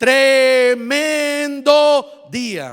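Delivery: heavily stressed, very slow. Suggesting a line to say to your husband, slow and emphatic. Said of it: "Cuando decimos las cosas más despacio, como que se hacen más enfáticas".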